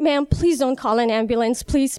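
acted frantic, panicked pleading tone. Retelling what they told a woman who ran over to help, acting out freaking out. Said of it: "I start freaking out and I'm just like".

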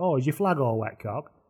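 put-on northern Lancashire accent. Retelling what a man said at a cup final: imitating a lancashire northern accent. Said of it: "in that very Lancashire Northern thing".

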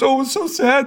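very high, weepy, sobbing crying voice. Retelling a sister's phone call after the finale: imitating sister crying. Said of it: "and she's crying".

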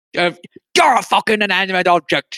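words squeezed out through clenched, gritted teeth. Quoting a line from a movie, imitating talking through teeth. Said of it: "talk through his teeth".

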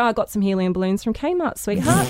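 normal talking voice

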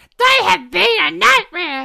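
put-on very high, rough, creaky woman's voice. Asked by the other speaker to imitate his wife. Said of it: "Impersonate your wife".

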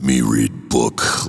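menacing, ominous, slow, deep giant-shark voice. Retelling a table read, voicing a giant scary shark: ominous deep voice. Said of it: "I just kinda give him ominous deep".

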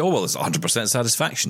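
normal talking voice

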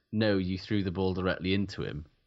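usual speaking voice

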